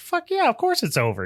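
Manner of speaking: very high, dopey, goofy cartoonish voice. Retelling the ending of a story, doing Mike Tobacco's goofy voice. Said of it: "in his fucking goofy voice".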